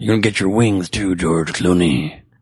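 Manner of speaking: gruff put-on superhero voice.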